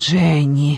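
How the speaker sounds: whispered as quietly as possible. Narrator reads a woman calling to Jenny, whispered as quietly as possible. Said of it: "прошептала я так тихо, как только могла".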